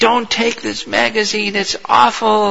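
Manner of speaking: put-on piercing, shrill, very high screech. Retelling how someone yelled at people taking magazines, imitating a high, shrill scream. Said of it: "screaming in high tone, shrill tone".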